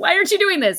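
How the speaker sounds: put-on yelling. Retelling what the youth pastor asked after the talk: imitating someone yelling. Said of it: "yelling at me".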